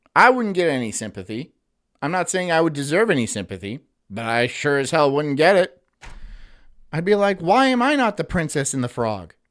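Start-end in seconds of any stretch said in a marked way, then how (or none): none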